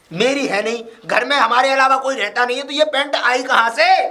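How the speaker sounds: shrill loud shouting. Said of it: "मुझ पे क्यों चिल्ला रहे हैं आप".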